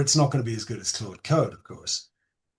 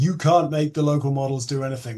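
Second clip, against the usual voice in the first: mock screaming and shouting; 3 semitones higher than usual. Imitating viewers who disagree: imitating viewers screaming at the screen. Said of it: "will be screaming at the screen going".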